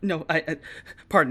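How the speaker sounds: scared, frightened, stammering delivery. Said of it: "scared as shit".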